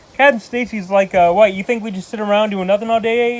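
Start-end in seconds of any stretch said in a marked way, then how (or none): none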